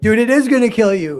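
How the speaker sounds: very loud, high-pitched screaming yell. Retelling a reaction to a movie scene: imitating screaming at the tv. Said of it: "you're screaming at the, at the T V".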